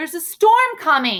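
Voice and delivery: energetic. Reading a book line that ends in an exclamation mark: energetic. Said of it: "I'd put a lot of energy behind it".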